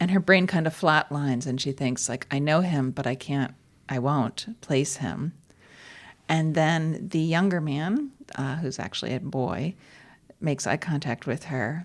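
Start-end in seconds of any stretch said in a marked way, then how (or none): none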